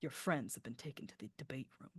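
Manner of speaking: hushed whispered aside, close and soft. Voicing a character who pulls a player close to speak: whispering. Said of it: "pulls you in and whispers".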